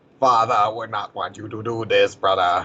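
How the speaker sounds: put-on cartoon accent. Quoting a favorite cartoon line: Sensei Wu's original accent. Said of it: "two lines after that with that accent".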